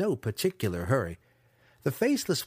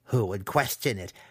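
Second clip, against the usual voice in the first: plain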